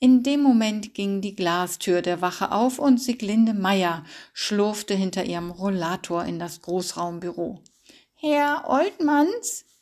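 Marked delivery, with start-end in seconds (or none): 8.1-9.6 raised calling out, higher pitch. Sieglinde Meier comes into the station and calls out to Herr Oltmanns. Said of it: "hörte er sie rufen".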